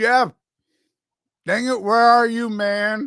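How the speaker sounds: muffled, mouth-full speech. Calling for Jeff to come back, talking with mouth full. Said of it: "I got food in my mouth".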